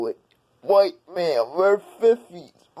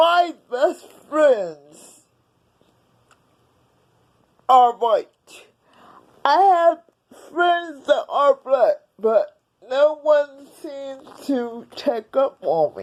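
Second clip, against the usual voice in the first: tearful speech, crying, higher; 6 semitones higher than usual. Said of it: "'cause I'm already crying".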